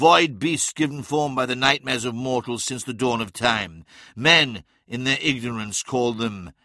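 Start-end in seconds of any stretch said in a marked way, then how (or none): none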